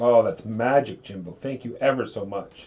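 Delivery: loud, drawn-out, heavily sarcastic tone. Thanking another player for a passed card: sarcastic thanks. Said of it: "is what we call sarcasm".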